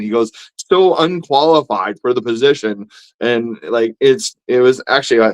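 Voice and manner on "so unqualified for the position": ordinary delivery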